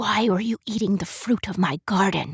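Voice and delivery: hoarse, rasping, raspy witch voice. Reading a story aloud, voicing the witch questioning Katya: raspy witch voice. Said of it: "the witch rasps".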